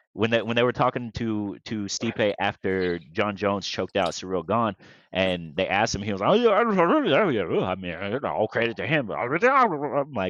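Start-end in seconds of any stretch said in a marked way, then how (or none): 6.3-9.1 put-on slurred mumbling speech, higher. Retelling a fighter's post-fight interview answer: Stipe Miocic impression. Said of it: "he sounds like Boomhauer".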